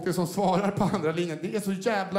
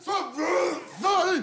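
high, slow furious yell. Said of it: "så jävla förbannad".

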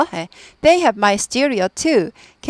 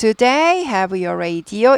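pitch rises at the end on "radio". English lesson on yes-no questions without question word, rising pitch at end of radio. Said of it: "이건 끝이 올라가죠".

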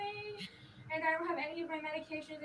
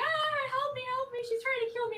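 put-on tearful crying, high and loud; 8 semitones higher, 7 dB louder than usual. Retelling how she broke the door and cried for help, imitating her crying plea. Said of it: "And then she starts crying".

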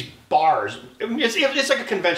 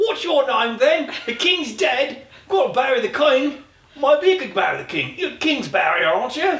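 daft sketch-comedy voice, very high-pitched; 11 semitones higher, 4 dB louder than usual. Making fun of the other speaker's maiden name, doing a Monty Python voice. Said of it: "I would do like a Monty Python voice".

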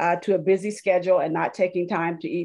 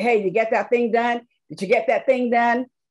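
put-on nagging, pitched-up New Jersey accent; 5 semitones higher than usual. Retelling his accountability buddy's morning calls, in a new jersey accent. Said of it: "with that New Jersey accent".

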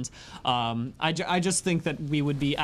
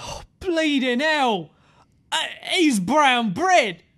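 loud outburst, much higher pitched; 9 semitones higher, 6 dB louder than usual. A salesman finds a body in the road: loud outburst. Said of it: "Keep your voice down".

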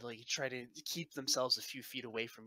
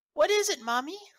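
put-on piping, very high, loud little girl voice; 12 dB louder than usual. A narrator voices a little girl speaking from behind the listener, in little girl voice. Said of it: "the voice of a little girl".

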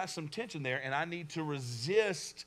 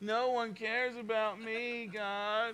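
very slow, drawn-out, high whining tone; 6 semitones higher than usual. Showing how a statement sounds when read in a whiny tone. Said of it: "I almost read it with like a whiny kind of like tone".

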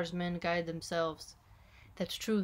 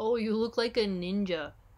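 put-on snide voice; 3 semitones higher, 4 dB louder than usual. Retelling what a coworker said to her, imitating a snide dig. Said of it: "it's kind of like a little bit of a dig".

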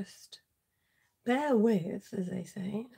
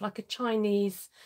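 ordinary talk

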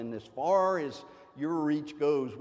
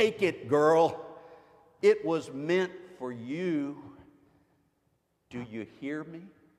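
mock-stern, acted voice in broken English. Retelling how their father told a crying woman to take the bread, in a mock-stern voice. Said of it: "in his broken English said sternly".

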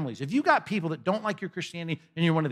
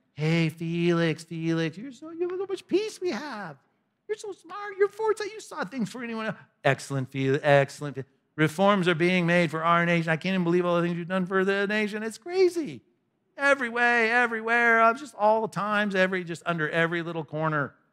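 sarcastic, put-on fawning tone, much higher; 2 semitones higher than usual. Retelling a man's speech on the stand, in sarcastic mock flattery. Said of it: "I read it with enough sarcasm in my voice".

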